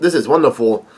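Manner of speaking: ordinary talk, nothing marked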